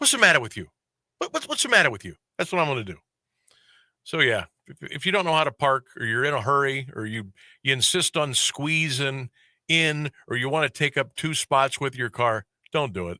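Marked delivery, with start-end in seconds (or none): 0.0-2.1 confrontational, stumbling words, swooping pitch. Telling how to confront a bad parker: Robert De Niro voice. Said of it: "I'll do the old Robert De Niro".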